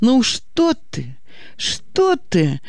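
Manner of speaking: very slow, frightened, scared delivery. A woman answers the girl's anxious question, frightened. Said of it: "испуганно замахала руками Галина".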